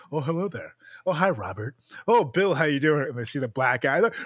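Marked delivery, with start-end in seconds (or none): 0.1-3.1 polite, formal meet-and-greet style voice.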